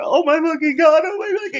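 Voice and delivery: very high, freaked-out, starstruck panic. Retelling what Mark Hamill was thinking inside while greeting someone: imitating Mark Hamill freaking out. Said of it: "Mark Hamill was just freaking out".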